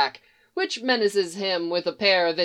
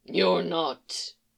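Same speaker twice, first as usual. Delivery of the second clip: low growling creature voice; 4 dB quieter than usual. Narrator reading the bewildered Beast's reply to her: Beast's low growly voice. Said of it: "voice still low and growly".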